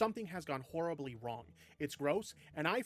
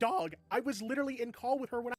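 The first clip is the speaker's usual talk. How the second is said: voice breaking partway through, cracking and pitched up; 7 semitones higher, 4 dB louder than usual. Explaining the situation to a listener, the speaker's voice cracking. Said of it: "The fucking voice crack".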